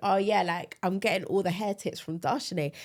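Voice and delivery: ordinary talk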